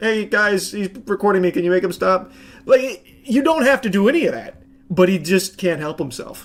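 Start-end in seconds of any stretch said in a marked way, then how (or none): 0.0-2.3 mock whiny complaining like a baby. Retelling a man complaining to the Walmart staff: imitating whining like a baby. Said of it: "complaining and whining like a baby".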